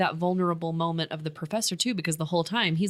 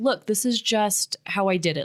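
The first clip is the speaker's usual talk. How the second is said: frustrated, exasperated, fed-up delivery; 3 semitones higher than usual. Retelling a film scene where Will answers his professor: frustrated Will voice. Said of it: "Will is getting really frustrated at that point".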